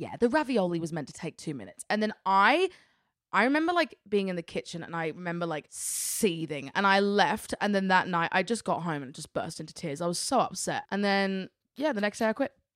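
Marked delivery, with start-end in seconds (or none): 0.0-1.8 play-acted, pointedly polite passive-aggressive needling. Retelling what the boss said in the kitchen: imitating a passive-aggressive remark. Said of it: "passive aggressively".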